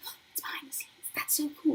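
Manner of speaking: high, gushing mock whisper. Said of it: "and I'm like".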